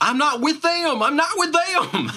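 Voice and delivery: very high, loud shouted yell. Trying the yell from inside again: yelling NPC voice. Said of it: "let me try it again".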